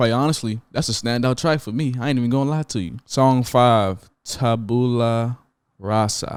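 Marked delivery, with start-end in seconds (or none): 4.2-6.4 slow, deliberate. Reviewing an album, announcing the next track's title, said slowly. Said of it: "You see how I said it slow?".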